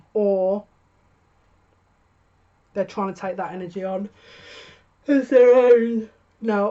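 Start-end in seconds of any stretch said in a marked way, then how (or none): 5.0-6.7 very loud, very slow speech through a yawn. Reading the cards about someone's feelings, speaking through a yawn. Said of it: "excuse me for yawning".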